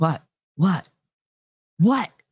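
slightly high-pitched, a bit squeaky voice. Recounting her reaction to being told to use a coaster, imitating a slightly high-pitched what. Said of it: "that last what came out a little bit high-pitched".

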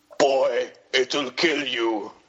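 very slow delivery, every word drawn out. Showing the others an impression of Peter Dinklage in Infinity War. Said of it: "I do a good impression of Peter Dinklage in Infinity War".

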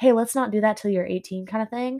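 usual speaking voice

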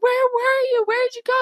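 very high, frantic, freaked-out panicked voice. Speaker recounting a movie plot, Mom reacting when he comes home, imitating Mom freaking out. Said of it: "Mom's like freaking out".

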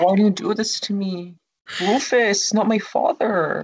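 really bad, over-the-top, high whining voice. Mimicking how she talks when she whines, bad whiny impression. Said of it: "that's a really bad impersonation".

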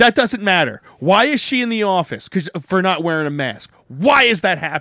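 heated, loud, angry, demanding tone. A parent retells questioning a man about her daughter being sent to the office, loudly. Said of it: "That's why she thought I was loud".

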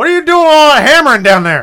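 put-on shrill, very loud, high-pitched holler, Southern accent. Describing an imagined wife at the top of the stairs, imitating her yelling down. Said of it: "she's yelling down like".

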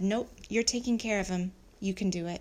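ordinary delivery

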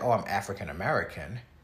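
ordinary delivery

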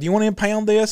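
ordinary talk

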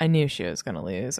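low, smug, self-satisfied know-it-all tone. Speaker mimics the mansplaining men she complains about, mock-smug. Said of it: "smugly like".

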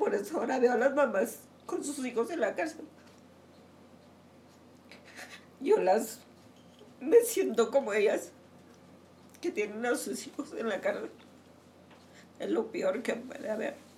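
crying while talking. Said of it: "Are you crying?".

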